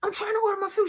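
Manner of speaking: high-pitched, very high, angry, fed-up griping. Retelling a friend's complaint in a drive-through line: imitating someone getting mad. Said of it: "Tamika gets mad".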